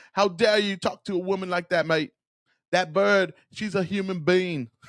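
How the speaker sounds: terrible put-on British accent. Acting out a Brit confronting someone, in a terrible British accent. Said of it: "my British accent's terrible".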